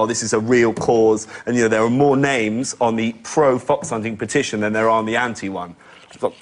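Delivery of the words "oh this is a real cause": ordinary talk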